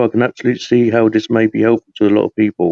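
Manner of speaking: ordinary talk, nothing marked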